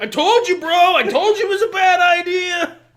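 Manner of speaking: very loud, high yelling. Acting out a scene with another speaker, blaming them: yelling. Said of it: "Why are you yelling at me?".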